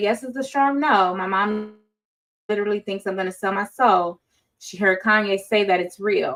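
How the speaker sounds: ordinary delivery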